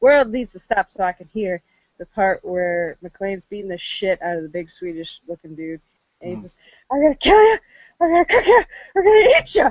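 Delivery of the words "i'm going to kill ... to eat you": acted, shrill, very loud, furious shrieking, rattled off fast. Retelling a favorite movie fight scene, retelling vehement angry yelling. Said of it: "the vehement anger and frustration".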